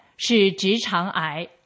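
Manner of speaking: plain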